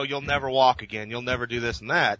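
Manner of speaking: normal talking voice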